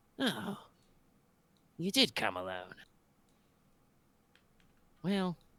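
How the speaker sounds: hushed, soft voice. A storyteller voices Tito X Gladius turning around to address the player: hushed voice. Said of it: "says in kind of a kind of a hushed voice".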